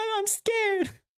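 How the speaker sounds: put-on tiny, very high little child voice. A scared child answers someone telling them to be brave, in a child voice. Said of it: "kids with that voice is crazy".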